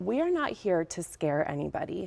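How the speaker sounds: ordinary delivery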